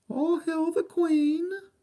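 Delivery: very high-pitched posh English accent. Finding a 1986 Canadian coin, the speaker hails the monarch in a Queen impersonation. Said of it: "You like my Queen impersonation? Or my English accent?".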